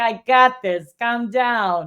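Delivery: slow, easy, assured put-on Italian accent. Retelling how a woman reassured a worried friend, in an Italian accent. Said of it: "in her Italian voice".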